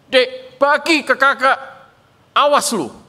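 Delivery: slow high angry voice. Retelling a story, voicing the older brother demanding candy: acting an angry older brother. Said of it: "kakaknya itu marah".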